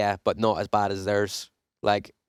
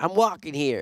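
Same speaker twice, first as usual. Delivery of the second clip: brash, put-on New York street accent, pitched up; 7 semitones higher than usual. On a podcast, recalling a kid's movie quote: New York accent. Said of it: "what's the the quote where it's the kid's like".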